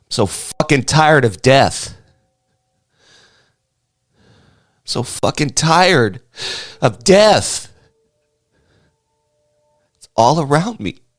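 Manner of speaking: speaking through tears. Grieving a best friend's daughter's death, crying while talking. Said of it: "Can't stop crying".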